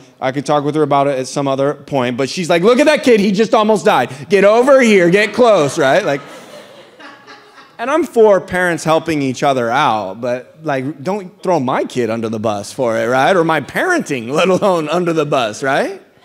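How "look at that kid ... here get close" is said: mock yelling, much higher and louder. Parent retelling how another mom yelled at her kids to come close, imitating a yelling mom. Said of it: "yelling at the kids to hug the rock".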